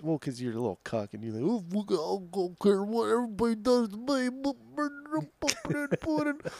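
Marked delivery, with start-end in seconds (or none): 1.4-6.5 very high, slow, drawn-out cartoon joke voice. Mocking the other speaker with an impression of someone doing Bill Cosby. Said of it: "I was doing an impression of somebody doing an impression of Bill Cosby".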